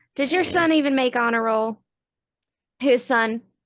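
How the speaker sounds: put-on loud drawling Southern US accent. Repeating the question in character as a fighter on request: southern drawl. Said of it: "can you repeat your question".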